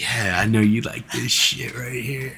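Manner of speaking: soft, intimate half-whisper, close in the ear. Retelling what a girl in a video says: imitating a woman half-whispering. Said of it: "whispering in your ear. She's like".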